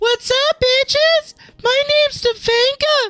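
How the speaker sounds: put-on very high-pitched, slow, girly voice. Imagining himself in lipstick and a wig, introducing himself in a high-pitched Stefanka voice. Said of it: "Is that too high pitched".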